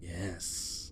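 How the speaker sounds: impression in a whisper.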